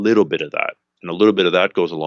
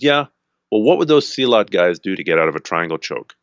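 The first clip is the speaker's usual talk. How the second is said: acted derisive, needling, scornful, mocking tone. Retelling how a guy at training challenged him: imitating a mocking taunt. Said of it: "kinda mockingly goes".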